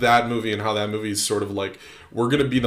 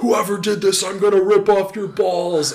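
very high, shrill screaming outburst; 10 semitones higher, 4 dB louder than usual. Retelling a movie scene where a dad screams at a killer: imitating a scream. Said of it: "he starts screaming".

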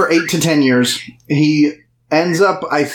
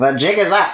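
weird, exaggerated put-on nasal voice. Imitating an actor's habitual put-on voice: exaggerated nasal voice. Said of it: "he likes to put on this weird nasally voice a lot where he's just like".

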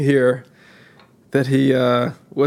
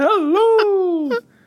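very high, laughing, squealing put-on nanny voice. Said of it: "do your Missus Doubtfire again".

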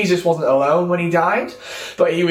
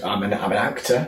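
quiet, hesitant, sheepish admission; 9 semitones lower, 5 dB quieter than usual. Retelling a ski lift story, quoting an actor's reply: imitating quiet sheepish speech. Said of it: "rather quietly and sheepishly said".

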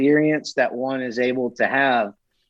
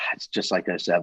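mock muttering, lower and quieter; 7 semitones lower, 6 dB quieter than usual. Retelling what someone muttered after taking one off the wall: imitating a mutter under the breath. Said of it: "he just uttered under his breath".

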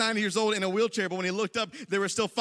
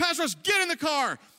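put-on yell, higher; 6 semitones higher than usual. Retelling how a man called him to get in the car: imitating someone yelling. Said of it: "he starts yelling".

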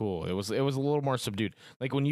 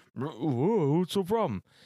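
put-on mouth-full voice, higher pitch; 6 semitones higher than usual. Retelling a story, the speaker voices Duck Sue replying, imitating talking with mouth full. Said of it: "just egg falling out of his fucking mouth".

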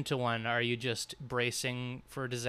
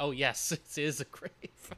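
sarcastic mock praise, quieter and slower; 5 dB quieter than usual. Acting out the reply the other host is supposed to give, sarcastic. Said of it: "This is the part where you sarcastically say".

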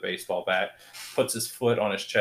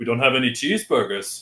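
loud, raised, bad put-on Irish accent; 3 semitones higher, 5 dB louder than usual. Retelling a film scene where Selena tells Jim they have enough food, bad Irish accent. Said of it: "Your Irish accent sucks".

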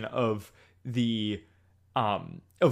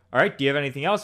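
put-on loud, fed-up, exasperated interviewer voice; 3 semitones higher, 5 dB louder than usual. Retelling the interviewer's question from the episode: imitating an exasperated interviewer. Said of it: "nails the exasperation".

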